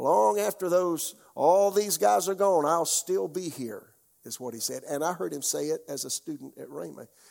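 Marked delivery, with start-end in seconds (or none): 0.0-3.8 put-on real country, homespun Texan accent, pitched up. Quoting a preacher's words, imitating Kenneth Hagin's homespun Texan accent. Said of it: "homespun, uh, Texan accent, real country".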